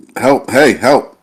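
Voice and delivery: loud, half-hearted, kind of yelled. Falling toward the ground in the game scene, yelling for help. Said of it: "I just kinda yell out".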